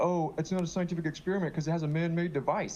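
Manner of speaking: heavy, poking-fun sarcastic tone. Retelling own past debate remark: imitating own past sarcastic remark. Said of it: "I was being sarcastic".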